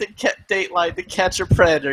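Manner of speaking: crying, broken-down, high, loud tearful blurt. Retelling a caught man's answer to the show's host: imitating someone crying. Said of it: "the guy starts crying".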